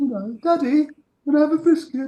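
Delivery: very high-pitched, sensitive little dog voice. Speaker showing the voice they do for their dog, high-pitched dog voice. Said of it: "it's quite high pitched".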